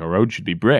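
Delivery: ordinary talk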